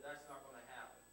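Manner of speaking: ordinary talk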